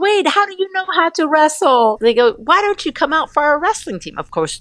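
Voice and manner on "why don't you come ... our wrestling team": lightly teasing, half-serious, half-joking tone. Retelling what the wrestlers said to the speaker, retelling a half-joking offer. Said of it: "half jokingly".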